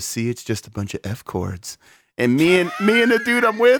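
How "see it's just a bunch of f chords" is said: soft, sappy, heartfelt sentimental voice. Retelling how a guy playing chords looked up and spoke: mock-sentimental voice. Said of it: "real like in a sentimental voice goes".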